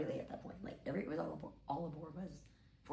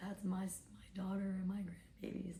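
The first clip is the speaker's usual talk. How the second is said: mock crying, sobbing with broken words; 2 semitones higher than usual. Retelling what a sobbing woman said about her family: imitating a sobbing woman. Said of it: "She's, like, sobbing".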